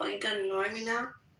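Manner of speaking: sultry, come-hither seductive tone. Retelling what a man said on the phone: imitating a seductive voice. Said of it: "With that seductive voice".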